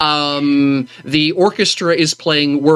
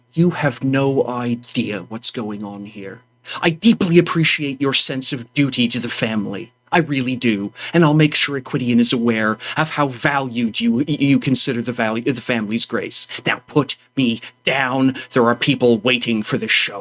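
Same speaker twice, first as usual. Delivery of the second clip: grumbling under breath, much lower and quieter; 3 semitones lower, 3 dB quieter than usual. Voicing a character held in someone's arms, grumbling under her breath. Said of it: "she's going to grumble under her voice and say".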